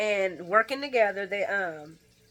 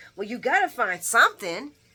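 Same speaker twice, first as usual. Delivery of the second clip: mock voice lifted slightly louder; 3 semitones higher, 6 dB louder than usual. Retelling a scene where Sonny questions Ava: imitating Sonny getting a little loud. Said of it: "he gets a little loud and he's like".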